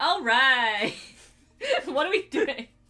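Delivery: very loud, high, swooping, slow belted drawl. Reading a comment's "All right" the way it sounds in the head: Linda Belcher voice. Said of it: "hearing it as, like, Linda Belcher".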